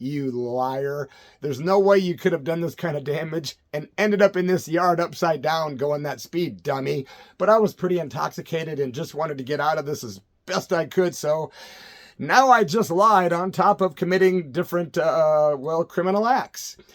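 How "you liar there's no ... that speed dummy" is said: ordinary talk, nothing marked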